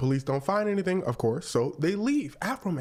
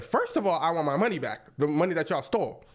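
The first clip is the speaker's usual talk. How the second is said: ordinary delivery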